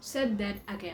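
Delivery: plain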